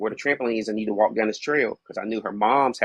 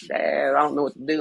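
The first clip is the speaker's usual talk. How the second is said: weepy, tearful voice, crying through the words; 4 semitones higher than usual. Retelling his daughter's phone call from home: imitating his crying daughter. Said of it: "And she's crying".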